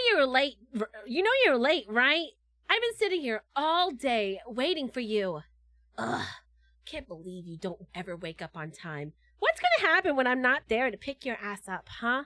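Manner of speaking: put-on playful, teasing girl-next-door voice. Speaker demonstrating a role type they used to do, girl-next-door voice. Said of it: "I used to do like the girl next door".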